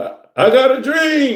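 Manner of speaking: very high, loud, slow, drawn-out swooping delivery. Acting out a planet speaking, in a Martin Luther King voice. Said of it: "In my Martin Luther King voice".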